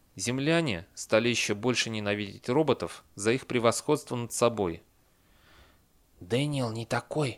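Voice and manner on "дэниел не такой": hushed, whispered voice. A man answers the other speaker, whispering in reply. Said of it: "– прошептал он в ответ".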